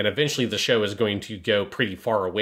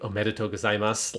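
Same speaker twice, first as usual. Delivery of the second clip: put-on, terrifyingly calm voice; 3 dB quieter than usual. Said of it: "terrifyingly calm voice".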